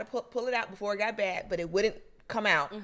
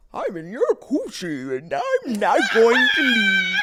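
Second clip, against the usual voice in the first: very loud, swooping comic-book villain voice; 5 semitones higher, 9 dB louder than usual. Giving Sylvester an imagined voice, picturing him sounding like Bane: a Bane voice. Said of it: "I think he'd probably sound like Bane".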